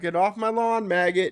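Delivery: screaming. Speaker on the sidewalk quotes a man yelling at him, imitating someone screaming. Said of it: "he's screaming at me now".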